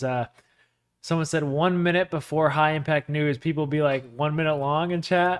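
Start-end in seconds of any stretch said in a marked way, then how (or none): none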